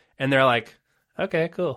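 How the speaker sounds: ordinary talk, nothing marked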